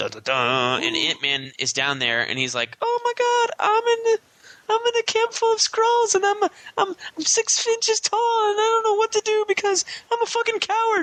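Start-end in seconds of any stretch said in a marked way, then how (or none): 2.8-11.0 very high, stumbling, stammering little character voice. Retelling a comic scene where tiny Ant-Man is among Skrulls: Ant-Man voice. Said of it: "you came this close to making him sound like the pedophile from Family Guy".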